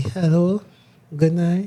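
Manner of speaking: seductive, flirty voice. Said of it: "Do the seductive voice to her".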